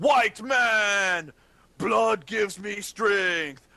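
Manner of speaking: loud, high, drawn-out, stretched warrior shout. Voicing a naked, blood-covered warrior pointing at the players: shouting in character. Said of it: "he shouts something in his language".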